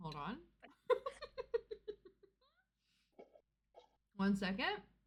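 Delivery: talking through a mouthful. Asked to explain the books, talking with mouth full. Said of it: "I have a mouthful of chicken".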